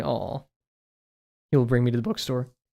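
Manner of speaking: voice cracking, breaking mid-line. Describing someone who indulges the speaker's book addiction, voice cracking. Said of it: "Voice crack".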